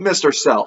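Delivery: plain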